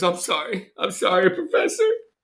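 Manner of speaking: put-on high, tearful voice, starting to cry. Voicing an actor on stage apologizing to the professor: acted crying a little. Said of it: "see her start to cry a little bit".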